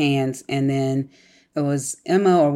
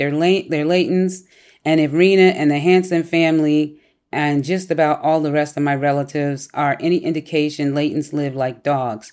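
ordinary delivery

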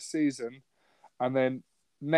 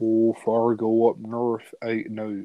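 put-on Somerset West Country accent, lower pitch; 4 semitones lower than usual. Trying out an accent while joking about Fargo: Somerset accent. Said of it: "Now you're stuck in Somerset accent".

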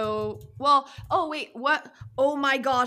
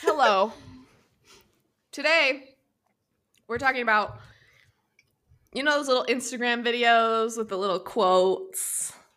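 speaking with candy in mouth, slower. Introducing today's topic to a co-host, talking with candy in mouth. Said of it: "I have candy in my mouth".

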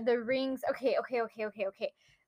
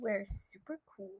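very quiet, hushed, overly cool voice; 13 dB quieter than usual. Trying to make their voices sound super cool, doing a super cool voice. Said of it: "That's my super cool voice".

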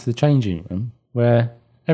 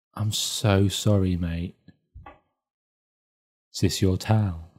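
soft, low, sheepish, apologetic voice; 4 semitones lower, 6 dB quieter than usual. Retelling what a man from the gym said to him, in a soft voice. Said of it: "a soft voice comes out of his mouth saying".

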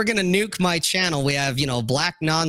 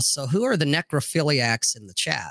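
ordinary talk

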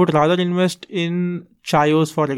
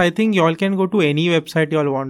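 ordinary delivery

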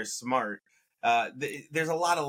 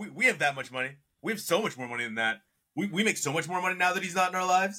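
jealous, resentful ex-partner sort of tone; 3 semitones higher than usual. Mocking the other speaker's take on the Mariners: imitating a jealous ex. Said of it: "You sounded like a jealous ex just now".

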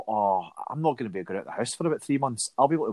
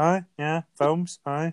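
mock unenthusiastic tone, higher; 6 semitones higher than usual. Mimicking the co-host's reply about films: imitating someone unenthusiastic. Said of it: "You don't sound very enthusiastic".

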